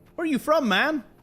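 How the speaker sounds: poor put-on American accent, pitched very high. Retelling someone asking where you're from, in a bad American accent. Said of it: "I can't do an American accent".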